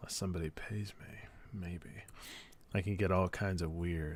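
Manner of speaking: very quiet, hushed whisper under the breath. Joking on stream about eating food off the floor: whispered. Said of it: "I like how you just whispered that".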